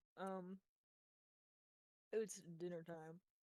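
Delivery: speech muffled by mouthful of food. Apologizing to the group while eating dinner, talking with mouth full. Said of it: "I have a mouthful of food".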